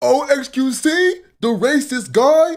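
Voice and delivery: terrible, squeaky, very high, very slow drawn-out voice. Redoing the impression just played to check it: imitating the [name] impression. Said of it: "Do I sound like that? Hold on".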